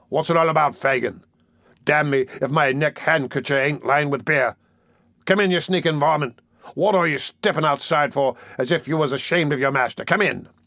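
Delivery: every word growled out from start to end.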